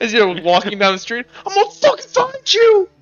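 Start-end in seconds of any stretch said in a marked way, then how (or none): 1.5-2.8 very high, shrill, freaked-out angry yelling. Voicing a man in line who freaked out, yelling after the players: freaked-out angry yelling. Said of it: "that one guy in line who freaked out".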